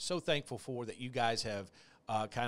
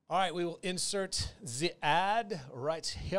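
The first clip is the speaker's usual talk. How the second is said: fake, put-on German accent, pitched up; 6 semitones higher than usual. A podcast host marks where the ad goes: German accent. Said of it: "I'm speaking like a German accent".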